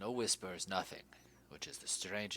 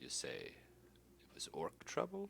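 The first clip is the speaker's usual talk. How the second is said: low, hushed whisper with the voice dropped; 5 semitones lower, 5 dB quieter than usual. Voicing a character who drops into a whisper mid-conversation, whispering, voice lowered. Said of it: "and he whispers, he, his, his voice lowers".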